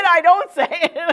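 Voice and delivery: laughing, high pitch, slow pace.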